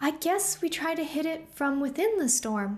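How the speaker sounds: put-on high girl voice.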